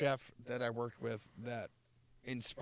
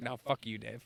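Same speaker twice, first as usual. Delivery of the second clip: put-on sarcastic, jabbing tone. Retelling a phone call with a friend: imitating own sarcastic jab. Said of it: "that sarcastic kind of fun that we have".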